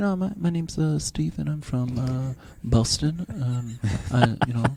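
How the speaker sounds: acted boring, halting, slow, dull droning speech. Retelling how the other contestants gave their speeches: imitating a boring speech. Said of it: "they're all kind of talking like that".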